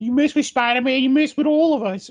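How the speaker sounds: silly cartoonish voice, pitched way up. Quoting the New Yorkers from a Spider-Man movie, in a Whitey from 8 Crazy Nights voice. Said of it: "why do you sound like Whitey from 8 Crazy Nights?".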